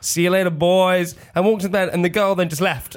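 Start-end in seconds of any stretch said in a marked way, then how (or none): 0.0-1.2 put-on American sheriff voice, higher and slower. Speaker retelling what he said to the guys, in an American sheriff voice. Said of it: "doing the voice of an American sheriff".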